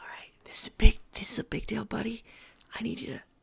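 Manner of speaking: whispering. A player whispers to Arlington, a raven familiar, before scouting: whispering. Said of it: "and I whisper to him".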